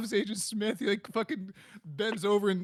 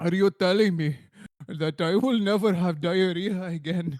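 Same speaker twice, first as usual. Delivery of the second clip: loud, earnest, put-on Indian accent; 3 semitones lower, 5 dB louder than usual. Acting out a joke scene, in a put-on Indian accent. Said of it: "I believe in your Indian accent".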